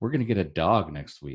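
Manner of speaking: hushed whispering. Sharing secret news while the kids are in the other room, whispering. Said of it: "I gotta whisper it because my kids".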